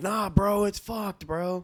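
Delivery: high-pitched exasperated yell. Recounting a stream clip where a man yells at his friend, imitating someone yelling. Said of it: "You can hear him yelling at his friend".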